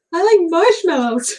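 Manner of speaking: really high voice. Describing the sister's character in their filmed episodes: Marshmallow's really high voice. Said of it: "she spoke in a really high voice like this".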